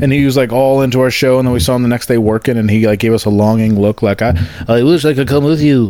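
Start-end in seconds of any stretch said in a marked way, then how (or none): 4.2-5.9 put-on Scottish accent. Voicing a Tesco worker's longing look, Scottish accent impression. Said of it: "That's my Scottish impression".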